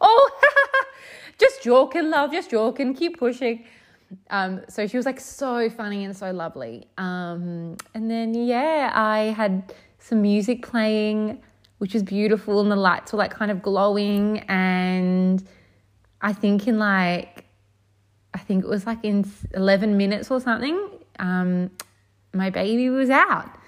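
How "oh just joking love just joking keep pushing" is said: put-on high, laughing, teasing Irish accent. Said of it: "she's like".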